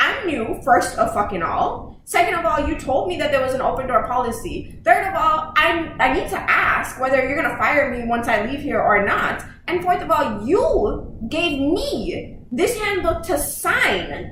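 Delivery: fuming, heated, building angry rant. Retelling what she told a superior at her new job, retelling an angry rant. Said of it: "I'm getting pissed off now".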